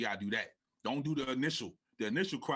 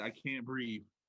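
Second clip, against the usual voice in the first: put-on blubbering sobs, like a crying child; 4 dB quieter than usual. Retelling how a woman cried into the camera: imitating someone sobbing like a child. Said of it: "she's like, you know how when the little kid get beat".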